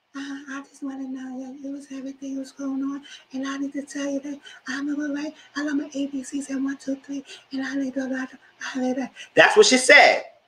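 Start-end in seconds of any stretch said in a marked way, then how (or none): 0.1-9.0 high, half-whispered, rambling little voice. Retelling what a friend said, imitating Paige's half-whispery voice. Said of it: "if y'all know Paige voice".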